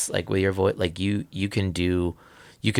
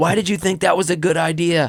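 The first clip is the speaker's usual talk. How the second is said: put-on scream, higher and louder; 10 semitones higher, 4 dB louder than usual. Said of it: "just screaming at kids".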